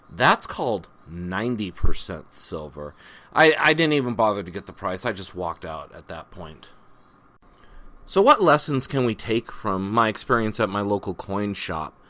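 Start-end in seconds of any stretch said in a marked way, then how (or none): 0.2-2.9 very condescending, snooty, talking-down tone. Retelling what she said at the local coin shop: imitating a condescending tone. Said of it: "very condescendingly".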